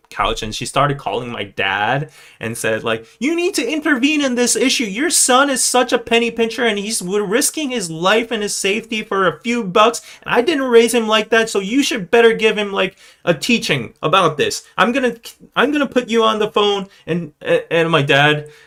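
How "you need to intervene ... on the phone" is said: acted-out high, angry scolding rant. Retelling how mom, super pissed, complained to dad on the phone: imitating angry mom. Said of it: "she got super pissed".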